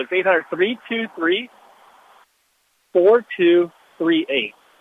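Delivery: slow, deliberate, each digit drawn out and spaced. Giving a phone number to listeners who asked for it: slowly. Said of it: "I'll say it slowly".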